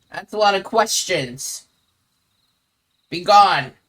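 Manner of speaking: put-on, creature-like goblin voice. Acting out a woman's answer to why they moved in, goblin voice. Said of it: "but goblin".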